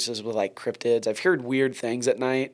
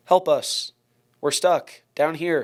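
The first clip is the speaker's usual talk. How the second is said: put-on flat, expressionless, deadpan little kid's voice; 4 semitones higher than usual. Recounting a voice heard from an elementary school while walking back: deadpan little kid's voice. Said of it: "but in a little kid's voice".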